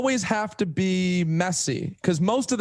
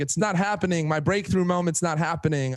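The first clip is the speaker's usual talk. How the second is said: ordinary delivery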